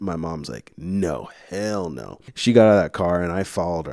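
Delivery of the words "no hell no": put-on furious, flaring-up outburst. Retelling an argument in the car, imitating a furious mom. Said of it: "She's furious".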